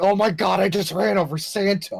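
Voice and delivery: mock, put-on horror and shock. Describing a replay to a friend, imitating fake shock. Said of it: "he's doing the whole fake, like".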